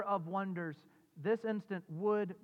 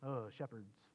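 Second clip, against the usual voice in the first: heavy disdainful, scornful tone; 9 semitones lower, 11 dB quieter than usual. Showing how to say 'shepherds' when the angels went to them: disdainful. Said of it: "you almost have to say it like that with that disdain in it".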